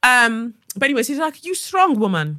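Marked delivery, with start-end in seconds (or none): 1.4-2.4 put-on failed Brazilian accent. Retelling what the receptionist said, in a bad brazilian accent. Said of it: "I can't do a Brazilian accent".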